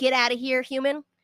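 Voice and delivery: mock sneering voice. Acting out a squirrel tough with a mini club: mock sneering as a squirrel tough.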